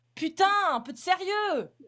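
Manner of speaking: high, slow, drawn-out, exasperated, worked-up outburst. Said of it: "Pourquoi tu t'énerves?".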